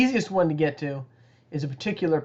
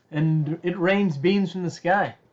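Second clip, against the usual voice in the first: plain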